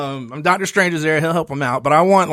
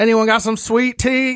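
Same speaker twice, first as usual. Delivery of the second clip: fake Southern drawl, pitched up; 7 semitones higher than usual. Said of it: "my Southernness took over my voice".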